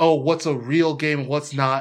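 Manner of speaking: ordinary talk, nothing marked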